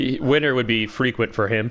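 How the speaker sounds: ordinary delivery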